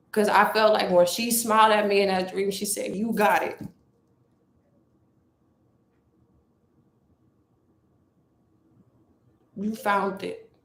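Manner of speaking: speaking through tears, tearful crying voice. Speaking to an audience about a dream, crying while speaking. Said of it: "This is why I'm crying".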